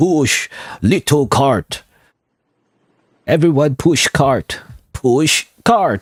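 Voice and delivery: bad, very slow, drawn-out lumbering brute voice. Recalling a TF2 voice line about pushing the cart, bad Heavy impression. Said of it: "I was trying to invoke the heavy".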